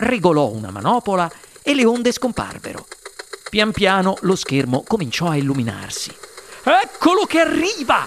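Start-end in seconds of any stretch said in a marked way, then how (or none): 6.6-8.1 very high, shrill, called-out shout. Mr. wonka calls out as the screen lights up, shouting. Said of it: "gridò il signor Wonka".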